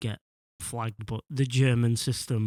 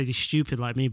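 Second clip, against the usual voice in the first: normal talking voice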